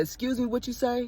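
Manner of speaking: playful, teasing, feigned-confused tone, play-acted. Retelling a driveway argument with an older neighbor: retelling playing dumb to be funny. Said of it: "I'm being funny where I said".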